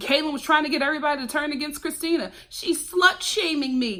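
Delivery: plain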